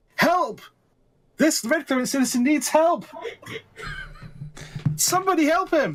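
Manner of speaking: urgent shouting, pitched way up. Player character next to the crowd after throwing someone down; shouting for help.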